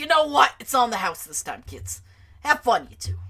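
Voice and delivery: put-on loud, high New York cab driver accent. Narrating a story, voicing the cab driver speaking to the kids, in a new york accent. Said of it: "He's getting the New York voice".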